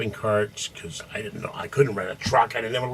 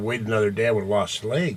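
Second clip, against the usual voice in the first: plain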